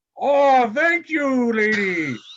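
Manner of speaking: put-on character voice. Voicing Blob thanking a player's character: voicing Blob. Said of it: "And Blob's like".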